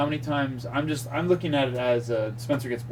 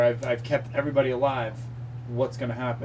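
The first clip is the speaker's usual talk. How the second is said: usual speaking voice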